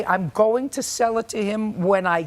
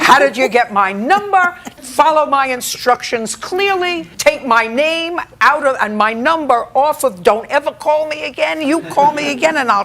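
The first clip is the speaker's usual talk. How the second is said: furious telling-off, loud and angry; 4 semitones higher, 7 dB louder than usual. Retelling a husband answering unwanted calls: imitating husband yelling on phone. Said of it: "You can hear him from the other end of the house".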